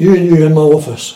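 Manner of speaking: loud, commanding shout. Retelling being called into the office: imitating someone shouting. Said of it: "Big Jokes shouts".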